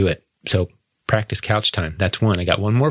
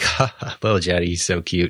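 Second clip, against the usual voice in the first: mock fond, amused laughter, lower; 3 semitones lower than usual. Acting out the adults' reaction to the interruption: imitating amused adults. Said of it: "all the adults are like".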